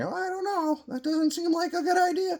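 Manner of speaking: put-on motherly voice, very high-pitched. Explaining the superego as the voice in your head, doing the inner mom voice. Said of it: "That's your inner mom voice in your head saying".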